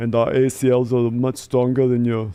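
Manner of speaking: put-on Austrian accent in spoken English. Voicing a football player called Dieter, in a Schwarzenegger accent. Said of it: "it's the Schwarzenegger accent".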